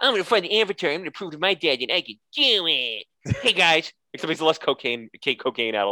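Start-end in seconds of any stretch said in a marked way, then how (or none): 0.0-3.9 put-on sulky, slightly high child voice. Retelling how a spoiled prince comes around: pouty Donald Trump Jr. voice. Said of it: "kind of pouty little Donald Trump Junior of a kid coming around going like".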